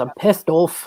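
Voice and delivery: put-on Scottish accent, plain delivery. Showing the first line learned in an accent: scottish accent. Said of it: "first thing I learned to say with a Scottish accent".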